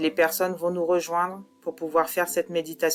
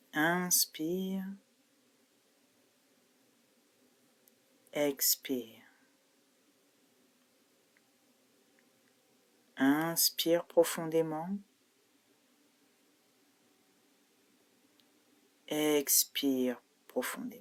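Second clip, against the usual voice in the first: hypnotherapist guiding voice, quieter; 5 dB quieter than usual. Guiding an online group meditation through breathing, in a hypnotherapist voice. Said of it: "Je vais prendre ma voix d'hypnothérapeute".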